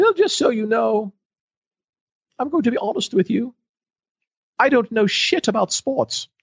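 very high, stately put-on British accent. Retelling what a distinguished doctor said in her office: imitating a british accent. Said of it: "she even had the British accent going".

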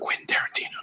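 hushed whisper under the breath. Retelling telling a friend a name: retelling a whisper. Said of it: "And I whisper".

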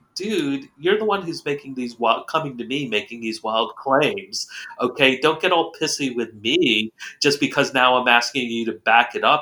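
ordinary talk

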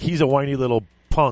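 normal talking voice

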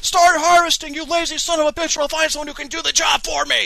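acted, all-caps bellow, very high and shrill. Retelling how they yelled at another player in a game: retelling a yell. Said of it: "I'm yelling at him on like talking caps".

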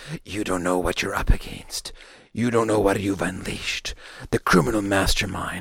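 rasping, hoarse, hushed half-whisper throughout. Imitating a movie character who speaks all the time: Josh Gad hoarse half-whisper. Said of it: "he just whispers the whole time".

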